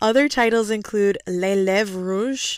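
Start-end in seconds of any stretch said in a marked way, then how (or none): 1.3-2.6 horrible, clumsy, badly done French accent. Reading out a film's foreign titles, horrible French accent.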